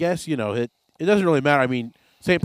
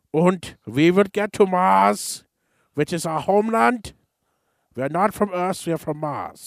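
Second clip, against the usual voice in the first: put-on German scientist accent, pitched up; 5 semitones higher than usual. Speaker imitating how German scientists sounded, in a German accent. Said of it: "probably all sounded like this anyway".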